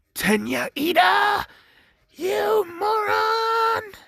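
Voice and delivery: high-pitched, drawn-out yelling. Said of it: "for it did yell out".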